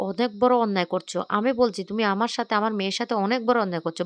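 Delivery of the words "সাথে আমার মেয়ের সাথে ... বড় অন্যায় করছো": ordinary delivery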